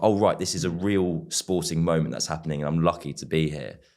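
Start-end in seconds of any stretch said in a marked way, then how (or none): none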